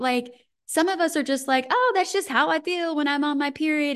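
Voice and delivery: sarcastic put-on voice. Talking about heavy bleeding, acting out what some people say: sarcastically acting out a quote. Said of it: "I'm being sarcastic".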